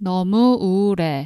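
said quickly. Teaching a Korean phrase, the speaker says it again, faster. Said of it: "if you say this faster".

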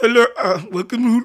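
cartoonish Indian shopkeeper accent. Asked how a favorite cartoon character's voice goes, doing an Apu voice. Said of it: "How does his voice go?".

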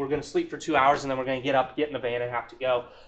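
ordinary talk, nothing marked

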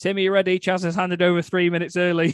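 frantic, panicked voice, high-pitched and loud. Retelling what Alex said in the earpiece: imitating Alex panicking. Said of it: "Alex really panicking and going".

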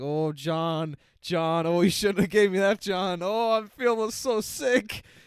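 loud, high, drawn-out, queasy, sick-sounding complaint. Acting out the cat after he eats lasagna: imitating Garfield feeling sick. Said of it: "and then he's like".

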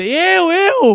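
put-on very high shouted yell. Retelling shouting out during a longboard giveaway, retelling a shout. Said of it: "Eu gritei".

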